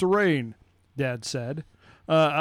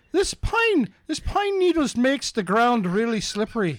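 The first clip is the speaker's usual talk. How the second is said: put-on Irish accent with raised pitch; 6 semitones higher than usual. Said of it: "I can't do an Irish accent".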